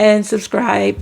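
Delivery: voice cracking and breaking mid-phrase. Host signing off a video to viewers, voice cracking. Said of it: "Sorry, my voice cracked".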